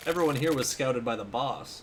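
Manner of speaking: ordinary talk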